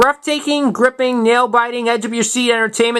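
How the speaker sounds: plain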